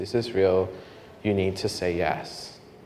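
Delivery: very, very soft, hushed inner voice. Retelling another voice heard during prayer: imitating a very soft voice. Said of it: "Very, very soft voice".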